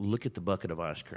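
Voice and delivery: plain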